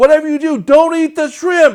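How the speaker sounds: shrill, screeching, very loud, high-pitched yell. Retelling how someone ran in and warned everyone: imitating someone yelling really loud. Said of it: "he yells really loud".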